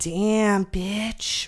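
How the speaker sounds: passing mutter under the breath. Retelling a stranger's remark while walking by: imitating muttering under breath. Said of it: "says under his breath as he's walking by me".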